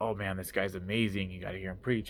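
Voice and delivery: ordinary talk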